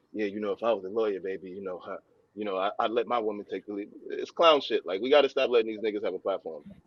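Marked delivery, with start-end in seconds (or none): 0.1-3.9 low, soft, smooth and easy come-on voice. Mocking a man's line to a woman who is a lawyer, mock smooth-talker voice. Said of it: "So he was trying to do a little, smooth".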